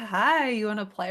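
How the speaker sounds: eerie toy-doll voice, slow and drawn out. Speaker retells the first time a doll spoke to them, in a creepy doll voice. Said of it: "in that creepy voice".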